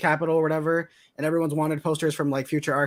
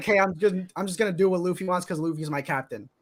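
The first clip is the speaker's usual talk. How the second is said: mock laid-back, relaxed, nonchalant tone; 2 semitones higher than usual. Describing the anime's relaxed character Zoro, imitating nonchalant Zoro. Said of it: "he's nonchalant".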